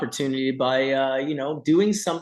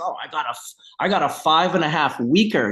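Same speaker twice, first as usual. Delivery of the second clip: put-on proud, boastful bragging tone. Imitating growers who boast about a short flowering time: imitating someone speaking proudly. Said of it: "they'd say it to me with, like, pride".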